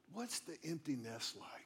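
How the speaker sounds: very soft, low, hushed, sighing, wistful tone. Retelling a question a man asked him, imitating a wistful sigh. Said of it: "kind of like almost a sigh in his voice".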